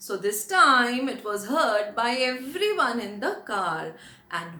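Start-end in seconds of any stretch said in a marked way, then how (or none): none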